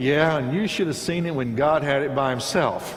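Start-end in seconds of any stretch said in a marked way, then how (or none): none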